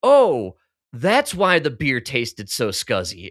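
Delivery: said in complete, stunned shock. Retelling a friend's reaction to the waiter: imitating someone in shock. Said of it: "in just complete shock and says".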